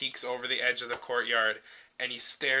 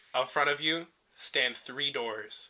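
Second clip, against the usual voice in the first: ordinary talk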